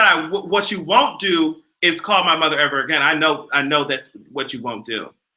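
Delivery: normal talking voice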